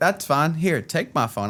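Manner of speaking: acted smug superiority. Retelling handing a phone to a dad when punished: retelling own high and mighty tone. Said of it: "I'd hand it to him all high and mighty".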